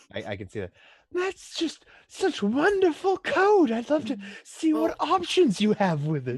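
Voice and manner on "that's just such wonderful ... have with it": very high, very loud, slow, shrill, swooping put-on voice. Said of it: "doing the Seeker voice".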